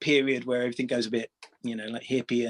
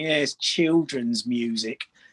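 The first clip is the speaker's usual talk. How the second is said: slow, sneering mock voice. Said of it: "in that really sort of sneering voice".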